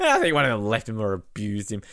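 put-on swooping, sing-song voice. Teasing the other speaker by repeating their line: mimicking the other speaker's delivery. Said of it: "it's just the way you said it".

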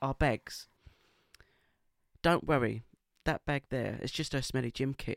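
best-effort put-on Essex accent. Retelling what a man said about their bags, in an essex accent. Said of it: "I'll try and do my best Essex accent".

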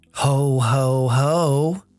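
eerie, unsettling, creepy chuckle. Answering Cliffa, the game master voices Santa in a creepy Santa voice. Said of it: "that's a creepy voice for Santa".

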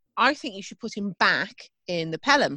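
ordinary talk, nothing marked

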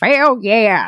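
put-on creepy, elderly old man character voice. Showing the voice used when someone answers with more than one word, creepy old man voice. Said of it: "I'm going to do the old man creepy voice".

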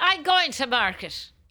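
put-on character voice drifting slightly into an Irish accent.

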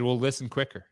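ordinary talk

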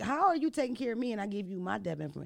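normal talking voice

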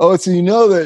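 put-on stoner surfer voice. Retelling what a hippie in Malibu told him; Spicoli voice. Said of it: "I'm talking like Spicoli".

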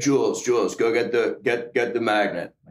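half-deaf voice impression. Playing all the parts of a story, speaker does his brother's half-deaf voice. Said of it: "so I'm gonna try and do his half deaf".

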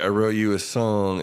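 ordinary delivery

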